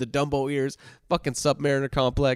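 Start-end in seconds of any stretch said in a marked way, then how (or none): none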